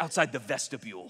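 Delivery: pompous, stuffy, puffed-up and overdone grand delivery. Reading out a churchgoer's complaint letter: mock pompous voice. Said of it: "they'll say it like that".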